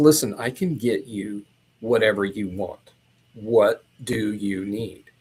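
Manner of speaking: suddenly grave, earnest, dead serious, low and slow. Retelling what a man said after he got real serious: imitating someone getting dead serious. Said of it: "he gets real serious".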